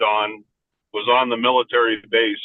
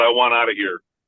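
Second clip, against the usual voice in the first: put-on bold, firm, clear voice. Retelling a patient's sudden last request, imitating a bold, clear voice. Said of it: "in a very bold, clear voice, he said".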